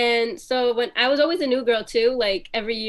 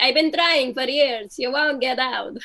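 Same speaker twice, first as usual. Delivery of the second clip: spooky vampire-style voice. Retelling her dad's answer to the police: imitating dad in a vampire voice. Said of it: "I don't know why he sounds like a vampire".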